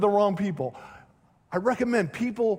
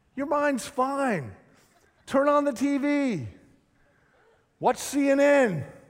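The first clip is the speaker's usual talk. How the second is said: put-on sarcastic tone; 5 semitones higher than usual. Giving mock advice on how to drift from god: put-on sarcastic tone. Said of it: "I'm being sarcastic for the next few minutes".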